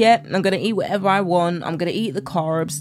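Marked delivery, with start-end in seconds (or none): none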